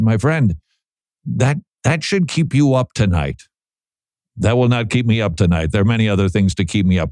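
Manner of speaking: normal talking voice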